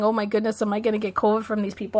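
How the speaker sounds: ordinary talk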